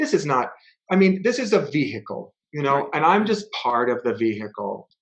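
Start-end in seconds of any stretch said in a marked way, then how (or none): none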